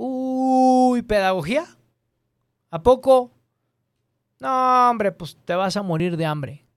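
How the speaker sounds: acted dismissive scoff, high, slow, "uy" drawn out. Retelling what someone said about studying pedagogy: imitating a scoffing tone. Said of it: "Con ese tono".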